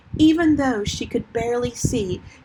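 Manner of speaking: ordinary delivery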